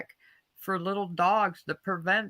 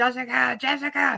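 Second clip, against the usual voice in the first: acted high, raw frantic screaming; 5 semitones higher, 4 dB louder than usual. Retelling running after vultures carrying off a Yorkie, retelling screaming a name. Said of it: "screaming for her the whole time".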